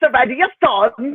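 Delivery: put-on British accent, done for a laugh. Imagining the other speaker calling out from the audience: put-on British accent. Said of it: "that's my British accent".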